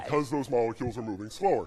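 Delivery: very deep, low, sunken voice. Explaining how the gas slows the air in the voice box, voice way down low. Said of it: "it goes way down low".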